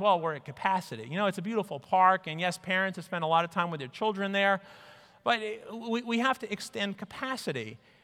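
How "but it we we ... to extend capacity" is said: normal talking voice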